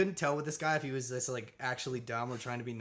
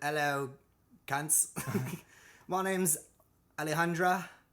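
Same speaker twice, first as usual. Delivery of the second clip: attempted put-on Australian accent, higher pitch; 3 semitones higher, 3 dB louder than usual. Retelling a Bachelor contestant introducing herself, in attempted Australian accent. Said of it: "what's it Australian?".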